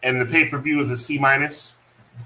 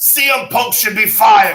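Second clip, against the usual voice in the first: loud, slow, infuriated, fuming voice at higher pitch; 8 semitones higher, 6 dB louder than usual. Reacting to a wrestling match: Wade Barrett voice. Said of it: "that's my Wade Barrett boy".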